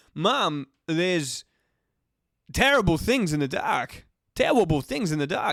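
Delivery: put-on voice, halting and dramatic. Riffing through voices, the speaker switches to a William Shatner impression. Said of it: "Now I'm doing William Shatner".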